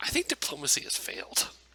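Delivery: hushed, whispered aside. Whispering to a captive in character that talks have failed: whispering in character. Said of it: "I'm just gonna whisper to him".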